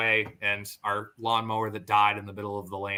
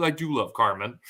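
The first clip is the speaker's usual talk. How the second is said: ordinary delivery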